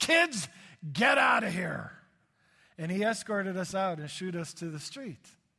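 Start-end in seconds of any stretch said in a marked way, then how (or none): 0.0-1.9 very angry, loud, rough, barking shout. Retelling how a security guard ordered the kids out, imitating an angry security guard. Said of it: "speaking with a very angry voice".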